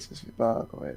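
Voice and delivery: hushed, whispered aside. Making an aside while another person is talking, whispering. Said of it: "je chuchote là".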